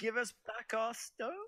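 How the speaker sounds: very high, slow delivery.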